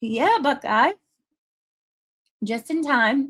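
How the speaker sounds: high-pitched, talking with mouth full of ice. Greeting viewers in chat by name, chewing ice while talking. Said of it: "ice in my mouth".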